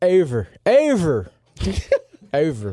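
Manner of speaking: Philadelphia accent. Giving a playoff pick around the table, saying it in a Philly accent. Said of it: "Got to say with a Philly accent".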